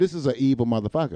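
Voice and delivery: ordinary talk, nothing marked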